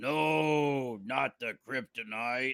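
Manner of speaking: very slow growling hero voice, no stretched out. Telling a joke where a dad growls: growling Batman impression. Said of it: "Dad growls".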